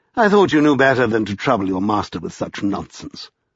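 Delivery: ordinary delivery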